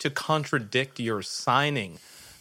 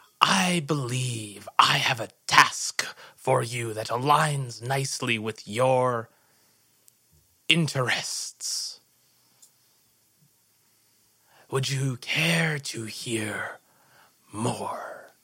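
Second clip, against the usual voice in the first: hushed, husky whisper. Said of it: "And in a husky whisper".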